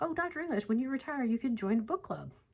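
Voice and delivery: high, eager student voice.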